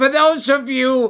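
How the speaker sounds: plain reading voice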